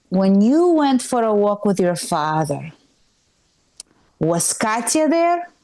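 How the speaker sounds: put-on Eastern European accent. Retelling a mom's questions after a walk: eastern european accent. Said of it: "That's the accent".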